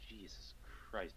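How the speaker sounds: soft muttering under the breath. Voicing Harold reacting to the golem: muttering under his breath. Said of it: "You hear Harold under his breath".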